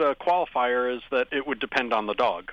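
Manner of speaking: ordinary talk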